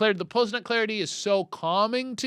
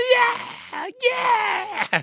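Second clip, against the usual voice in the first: very high, demonic screaming. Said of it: "I can hear him in my ears going".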